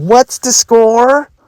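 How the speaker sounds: mock very high, grating, needling, taunting voice. Retelling how an opponent would stop them before a point, imitating a most annoying tone. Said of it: "ask me in the most annoying tone of voice".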